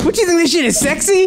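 irritated tone. Retelling a comeback to a friend who mocked the hindi: imitating own irritated reply. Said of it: "I am so irritated".

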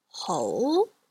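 ho climbing from middle to top pitch. Teaching the second tone: mid-rising tone on ho. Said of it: "this is the mid-rising. So locate the middle of your vocal range, rise up to the top of your vocal range".

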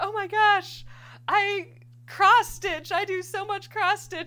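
shrill, very high, loud, squealing gushing. Speaker retells the doctor's reaction on hearing about her embroidery kit company, mock-excited. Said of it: "she got all excited and she's like".

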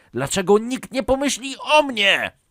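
shrill screaming, very high pitch, loud. A son keeps arguing with his father over the boss's complaints, screaming. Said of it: "Wrzasnął koszmarny Karolek".

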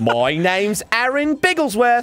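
put-on British comedian voice. Announcing a name in a joke show intro, sounding like Russell Brand. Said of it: "You sound like Russell Brand".

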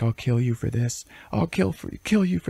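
put-on weeping through the words, very high. Retelling a story, acting out a crying character's threat, imitating someone crying. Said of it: "And Mouth is crying".

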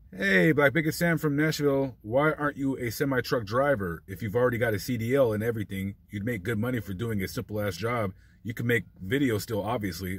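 ordinary talk, nothing marked

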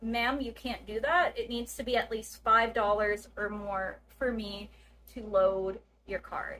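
ordinary talk, nothing marked

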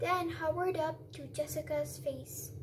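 plain

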